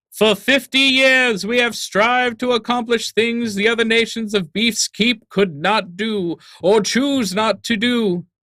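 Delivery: very high, loud, thundering, booming voice. Voicing a voice heard from the distance: loud booming voice. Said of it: "you can hear a loud booming voice".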